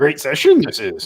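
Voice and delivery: little alien sage voice. Host reading a viewer's comment aloud during the session, in a Yoda voice. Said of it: "I do a good Yoda".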